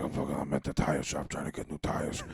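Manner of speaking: put-on gruff comedian voice. Showing another speaker the impressions they can do: Joey Diaz impression. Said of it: "He's like".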